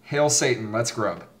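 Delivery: ordinary talk, nothing marked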